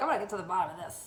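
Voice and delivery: put-on persona voice, full of attitude. Retelling going outside to investigate the unit, put-on Karen attitude. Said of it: "I put on my best Karen wig".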